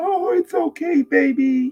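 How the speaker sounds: very high, comforting, soothing mom voice. Contrasting how adults react to a fallen child, imitating a comforting mother. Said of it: "what does the mother do? Pick him up".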